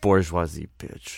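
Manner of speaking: very low mutter under the breath. Speaking in character as the boss hands out checklists: muttered under breath. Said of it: "Under his breath".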